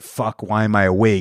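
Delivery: plain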